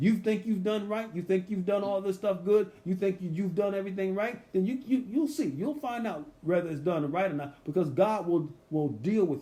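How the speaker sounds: openly sarcastic voice, sarcastic tone. Paraphrasing a speaker from a scripture verse: imitating a sarcastic tone. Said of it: "he's talking here with sarcasm".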